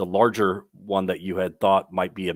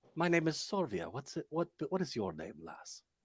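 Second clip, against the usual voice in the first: hushed, soft, high, put-on Irish accent; 7 semitones higher, 12 dB quieter than usual. Player voicing a character who asks someone's name: attempted Irish accent. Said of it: "I'm trying to do an Irish accent".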